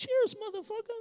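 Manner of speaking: tiny, very high, squeaky voice. Retelling how a man filled his glass, looked at you, and spoke: small squeaky voice. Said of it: "in a small, squeaky voice said".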